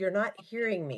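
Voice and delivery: ordinary talk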